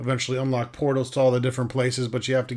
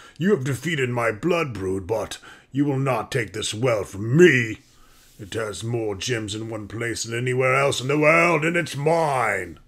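growling ancient dragon voice. Narrator voices an ancient red dragon confronting the party at the well, growling dragon voice. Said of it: "he growls".

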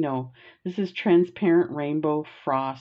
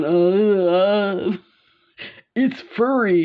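put-on very slow speech as if mouth full; 3 semitones higher, 5 dB louder than usual. Retelling the mother biting into an unpeeled kiwi: imitating talking with mouth full. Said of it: "holding it in her mouth going".

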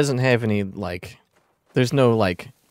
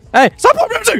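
shouting, higher and louder; 6 dB louder than usual. Yelling at the game to stop playing music: yelling. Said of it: "I had to yell".

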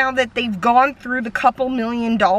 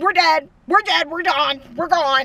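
mock yelling, faster; 6 semitones higher than usual. Retelling someone stuck on train tracks in a car, retelling a yell. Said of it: "they're like live yelling".

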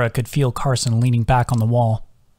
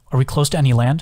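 plain reading voice

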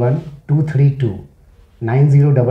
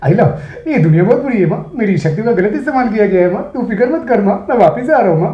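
put-on innocent, childlike voice, pitched up; 7 semitones higher than usual. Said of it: "Hrithik Roshan की कोई मिल गया कि movie".

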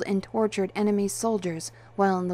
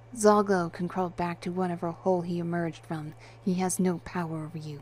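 ordinary delivery, nothing marked

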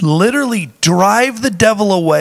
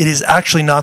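ordinary talk

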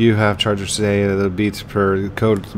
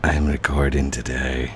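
deliberately creepiest, cringiest voice; 7 semitones lower than usual. Greeting viewers after being asked to: creepiest, cringiest voice. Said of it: "Do it in the creepiest, cringiest voice".

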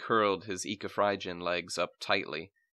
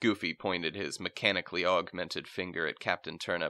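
plain reading voice

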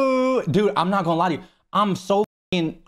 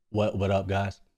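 trying to sound cool, much lower, quieter; 10 semitones lower, 7 dB quieter than usual. A shy guy rehearsing how to greet people in the Discord: trying to sound cool. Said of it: "That sound cool or no?".

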